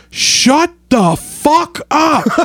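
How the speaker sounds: mock high, very slow, very drawn-out yell. Retelling how someone in the back of the theater reacted: imitating someone yelling. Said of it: "in the back just yells".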